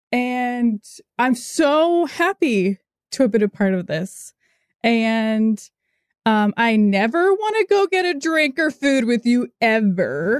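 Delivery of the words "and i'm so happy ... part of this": voice on the verge of tears, overcome with emotion. Speaking to a group the speaker is proud of, on the verge of tears. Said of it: "I'm gonna cry".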